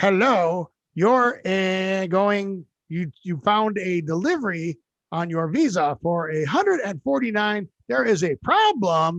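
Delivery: bad put-on robotic recorded-message voice. Retelling a scam phone recording: imitating a bad robocall voice. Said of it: "it's a robo voice, but it's really bad".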